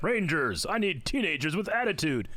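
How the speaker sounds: voice sounding like through a toy voice changer. Retelling playing with a voice-changing toy microphone as a kid: imitating Zordon's voice. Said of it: "you could speak as Zordon".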